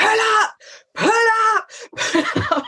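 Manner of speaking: very high, long-held, drawn-out shouting. Retelling an instructor calling riders to stop: imitating Stephen shouting. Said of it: "shouting, going".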